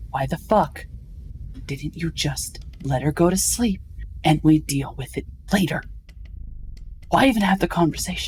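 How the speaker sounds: put-on hushed whisper. Speaker acts out leaning close to Elias and questioning him, retelling a whisper. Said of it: "as I start whispering".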